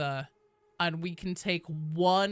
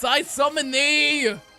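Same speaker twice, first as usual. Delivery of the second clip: put-on eerie, high, raised old woman voice; 9 semitones higher, 8 dB louder than usual. Speaker summoning someone, old lady voice from the depths. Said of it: "The old lady voice from the depths".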